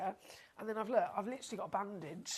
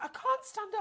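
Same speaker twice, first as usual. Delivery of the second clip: mock very high, panicky wail; 12 semitones higher, 4 dB louder than usual. Retelling a mum stuck on a bouncy castle: imitating a panicking mum.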